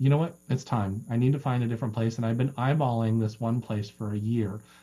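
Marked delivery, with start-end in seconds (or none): none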